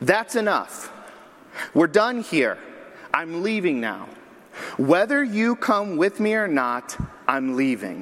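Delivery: play-acted firm, no-nonsense, stern scolding tone. Recounting words overheard while approaching, retelling someone's stern voice. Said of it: "say in a stern voice".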